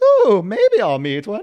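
put-on very high, very loud, old-movie camp-style voice.

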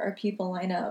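normal talking voice

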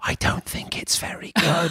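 hushed, secretive, slow conspiratorial whisper. Retelling a quiet aside to other reviewers: imitating a whisper. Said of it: "whispering to other people reviewing it".

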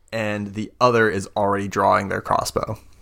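ordinary delivery

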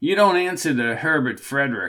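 ordinary delivery, nothing marked

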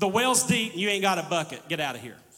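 mock dismissive brush-off tone. Retelling the woman at the well brushing Jesus off: dismissive retort. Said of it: "you can hear the tone".

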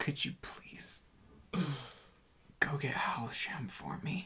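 imitated very quiet voice. Narrating a game scene, a character speaks to Bubbo; retelling a very quiet request. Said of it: "very quietly says to Bubbo".

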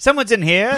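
very high, called-out carnival-barker voice. Explaining how John Mulaney delivers a joke, doing John Mulaney carnival-barker voice. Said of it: "he sounds like a carnival barker".

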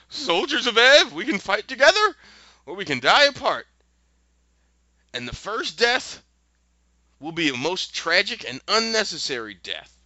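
very wobbly, shaky, high, trembling quavering voice. Retelling a story where the wizard addresses the soldiers, worst, shakiest voice. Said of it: "in the worst, shakiest voice".

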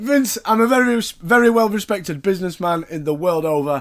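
plain

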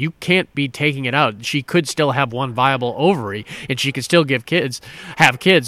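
ordinary delivery

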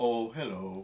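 put-on mopey, gloomy donkey voice. Greeting listeners at the start of an episode in an Eeyore voice. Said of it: "That's my Eeyore one".

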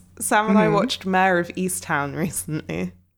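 ordinary talk, nothing marked

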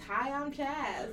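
deadpan, dry, flat monotone delivery. Mocking the co-host's introduction right after it: imitating Chaz's dry, flat intro. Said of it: "Dry ass".

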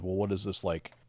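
plain

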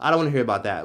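ordinary delivery

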